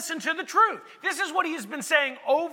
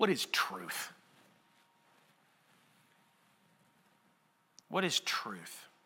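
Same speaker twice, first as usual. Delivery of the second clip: mock-bored, dismissive, near-whispered brush-off; 10 dB quieter than usual. Retelling Pilate turning his back on Jesus, as mock eye-rolling Pilate. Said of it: "You can almost hear him roll his eyes".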